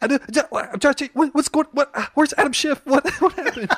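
put-on freaked-out Boston accent, very high, very loud. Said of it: "You're doing your high-pitched Boston".

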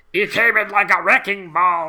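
loud, slow, put-on German accent. In a joking exchange, a line in a put-on German accent. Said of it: "That's my German accent".

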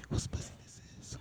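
quick, quiet whisper.

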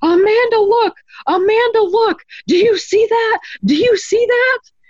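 acted-out scream. Recounting waking the daughter to see a floating orb, retelling a scream. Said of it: "And I started screaming".

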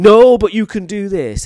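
booming, very loud shout. Retelling how a teacher reacted to a kettle brought to the desk: imitating a teacher shouting. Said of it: "He shouted at me".

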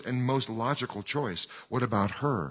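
ordinary delivery

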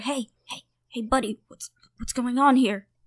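speaking in a whisper. Two characters meet up with Yevgeny and greet him, whispering. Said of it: "I guess we whisper".

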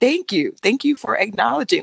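sobbing, tearful voice, crying through the words. Retelling how a woman in pain answered, starting to cry: imitating someone crying. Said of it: "And she just started, like, crying".

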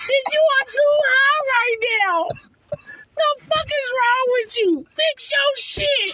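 very high, loud voice through laughter. Speaker retells reacting to a man announcing a game in the backyard, retelling a laughing remark. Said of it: "I'm laughing like".

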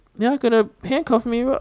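put-on pleading, pitched way up, protesting tone. Retelling a kid speaking to a cop holding zip ties; imitating someone pleading. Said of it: "the kid's like sitting there pleading like".

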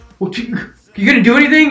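high, loud, exasperated voice.

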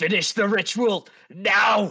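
high, loud yelling. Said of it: "he's gonna yell out".

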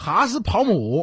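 Hubei accent. Asked how to say a word in different dialects, Hubei dialect. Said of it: "湖北话".

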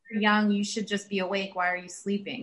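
plain

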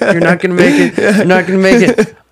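very high, very loud yelling. Recalling a video where people yelled at a rider, imitating people yelling. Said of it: "they're all just like yelling".

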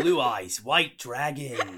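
very loud, booming bellow. Answering a request to do the Kaiba voice: Kaiba voice. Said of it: "Do the Kaiba voice".

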